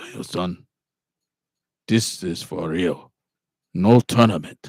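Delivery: slow, loud, measured delivery. Retelling a movie scene, quoting the teacher: Mr. Miyagi impression. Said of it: "he's like".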